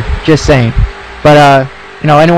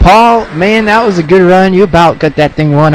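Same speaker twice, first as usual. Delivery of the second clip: put-on southern US accent; 4 semitones higher than usual. Interviewing Paul about his race: put-on southern accent. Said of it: "I'm trying to talk in the southern accent here".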